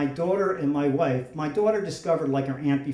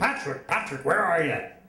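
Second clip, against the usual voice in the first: put-on big, projected fatherly voice calling out; 2 semitones higher than usual. Retelling how his father called for him on arriving, booming voice. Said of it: "he had this booming voice".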